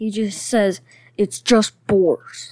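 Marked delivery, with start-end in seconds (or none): 1.2-2.5 irritated, angry, aggravated insistent tone. Retelling how the criminal Boris the Animal says his line: imitating Boris the Animal angrily. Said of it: "so angrily".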